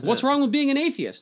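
acted, pointed, loud, very high-pitched voice. Retelling asking a woman who whispered she's an atheist too, retelling a loud question. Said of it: "In a loud voice".

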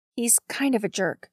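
ordinary delivery, nothing marked

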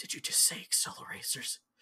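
hushed, really quiet whisper with disbelief. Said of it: "he gets really quiet".

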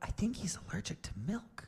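soft, leaning-in, whispered aside. Reading a story aloud where one character leans over to another: whispering. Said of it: "Leaned towards Austin and whispered".

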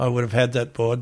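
plain

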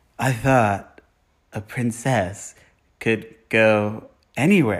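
mock wooden delivery. Mocking a handsome movie actor's line to a co-host, mimicking wooden line delivery. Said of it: "he can't deliver a line".

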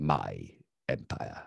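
deep voice, grating and rough. Chiming in on talk about the Empire, in a Palpatine impression. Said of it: "That was a really good impression".

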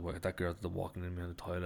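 ordinary delivery

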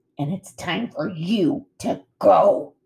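slow, drawn-out growling words. Thorn the bear confronts Bright Bill alongside Nettle, growling. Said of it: "growled Thorn".

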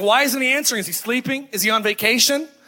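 mocking, jeering heckler-style taunting voice. Retelling how Elijah taunted the Baal prophets: imitating Elijah heckling. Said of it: "he's just kinda heckling".

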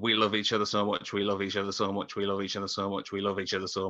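usual speaking voice

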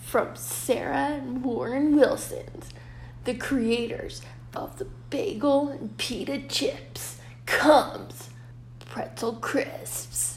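slow, dramatic, breathy, hushed movie trailer narration. Reading from notes to another speaker, in a movie trailer voice. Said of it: "I was doing that like a movie trailer".

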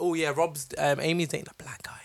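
mock whisper. Recalling what uni friends said about amy dating him, the speaker imitates a whisper. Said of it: "Why are you guys whispering this?".

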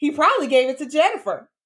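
smirking sarcastic jab. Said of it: "you know how she be talking, like, with that sarcastic ass smile".

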